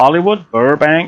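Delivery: really poor put-on American accent. Pointing out sights, saying place names in a really poor American accent. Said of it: "That's my really poor American accent".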